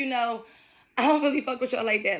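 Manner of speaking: breezy, light, half-joking delivery. Retelling a remark to someone from the job: imitating own light joking tone. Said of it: "I said it just in that tone".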